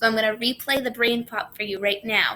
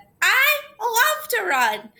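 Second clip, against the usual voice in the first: gushing, swooping, super excited, very high, very slow; 12 semitones higher, 3 dB louder than usual. Speaker teaching sentence types, demonstrating an exclamation; super excited. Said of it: "Super excited".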